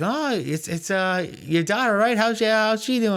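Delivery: acted, very high, snide and snarky voice. Imitating people who ask the speaker about their child, mocking a snarky question. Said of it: "with this like snarky like voice too".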